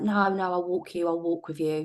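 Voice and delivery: ordinary talk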